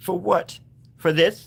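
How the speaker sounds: crying through the words, high and tearful. A character speaking about the family begins crying. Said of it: "I said I wouldn't cry".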